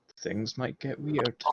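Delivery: very soft, hushed murmur. Speaking in character to the other two: very quiet in-character line. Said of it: "I say very, very quietly".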